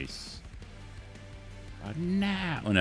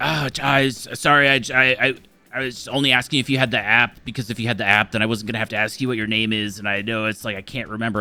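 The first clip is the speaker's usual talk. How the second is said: put-on stressed, flustered, stammering voice; 6 semitones higher, 7 dB louder than usual. Retelling a barista apologizing about the app: imitating a stressed, stammering barista. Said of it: "he stresses himself out".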